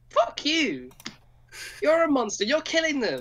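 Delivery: yelling in character voice. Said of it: "My character's shouting at you".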